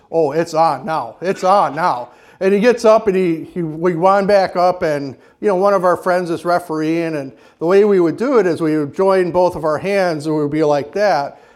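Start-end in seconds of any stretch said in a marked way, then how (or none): 0.1-2.1 slow, mad, simmering, angry menacing tone. Retelling what the opponent said after getting up: imitating someone angry. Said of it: "he's just mad".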